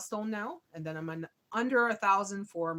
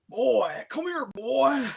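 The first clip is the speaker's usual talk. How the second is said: loud, very slow, lingering drawn-out leering come-on; 6 semitones higher, 7 dB louder than usual. Acting out what an inmate says to a newbie in prison: voicing Bubba. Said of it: "like Bubba".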